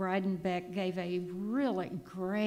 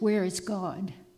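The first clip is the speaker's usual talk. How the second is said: put-on loud, very mean, stern voice; 5 dB louder than usual. Telling a story where the pastor points at the little boy: retelling a mean voice. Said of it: "in a real mean voice and says".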